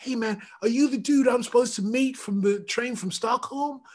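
cool, high-pitched American accent.

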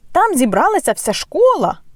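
very high-pitched, exclaimed call. Looking out of the doors before the game, he calls to the team: exclaimed. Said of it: "вигукнув Фред Уізлі".

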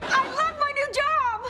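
very high, stretched-out, drawn-out shriek. Monica speaks to Chandler after getting her dream job, screaming. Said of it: "you're screaming".

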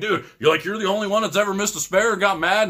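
high, angry, freaked-out yelling. At bowling, speaker retells another bowler yelling at him over a missed spare, retelling his yell. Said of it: "he starts yelling at me like".

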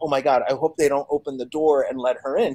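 ordinary talk, nothing marked

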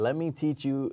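put-on heavy Italian accent. Quoting a man who offered to teach the speaker, heavy Italian accent. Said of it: "He has got this heavy Italian accent".

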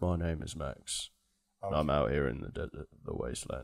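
grumbling low and quiet. Imitating the Fury Road lead who speaks low to hide his accent, do a low, grumbly Max voice. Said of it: "it's so grumbly".

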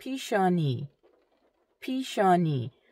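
deliberate, slow, spaced-out pronunciation of pishani. In a vocabulary lesson, the speaker repeats a word for learners: slower, careful pronunciation. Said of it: "I'm going to say it a little slower".

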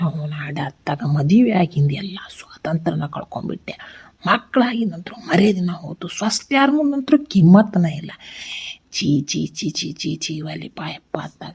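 soft, whispered muttering under the breath. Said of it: "ಜೋರಾಗಿ ಹೇಳ್ರಿ".

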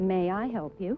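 put-on condescending tone. Retelling a story, voicing an annoyed salesman who came up, mock-condescending tone. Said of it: "he said in the most condescending tone".

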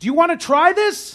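high, loud yelling over engine roar.

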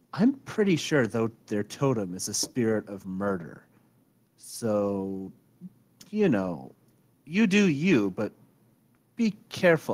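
conspiratorial, confiding tone with drawn-out "so". A woman confides to her listeners, conspiratorial lowered voice. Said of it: "Her voice kind of takes on a conspiratorial tone as she lowers it".

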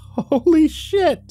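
tiny, very high, squeaky squirrel voice. Reading a story aloud, voicing the small gray squirrel, in a squeaky squirrel voice. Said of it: "it squeaked".

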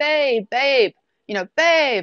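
long, stretched-out, high, drawn-out call. Retelling calling for him through the house with police behind her: retelling a yell. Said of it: "I'm just yelling like".

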